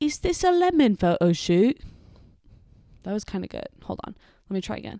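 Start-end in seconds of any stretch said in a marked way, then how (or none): 0.0-1.8 put-on high, loud British accent. Retelling what a man from a family at a skate park asked, british accent. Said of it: "the guy says in a British accent".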